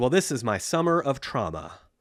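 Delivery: put-on cheeky, sassy girl's voice. Retelling a daughter's reply to the neighbors: imitating a sassy girl. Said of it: "she was all sassy".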